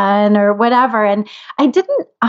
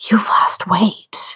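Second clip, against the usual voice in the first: hushed, secretive, confiding whisper. Speaker retells what she whispered in her ear at her house: retelling her secretive whisper. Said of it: "she kind of whispered to me".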